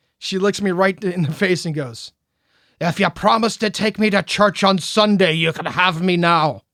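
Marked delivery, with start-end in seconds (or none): 2.8-6.5 put-on Irish-accented voice appearing suddenly. Retelling what a woman suddenly said to him over cocktails, sudden Irish accent. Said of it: "in an Irish accent that she hasn't had at all".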